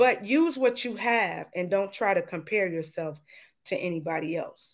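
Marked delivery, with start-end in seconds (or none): none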